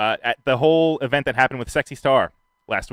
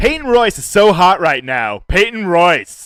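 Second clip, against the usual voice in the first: all-out high, loud yell; 5 semitones higher, 6 dB louder than usual. Reading out item number three, yelled Derek Zoolander impression. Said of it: "think you just yelled".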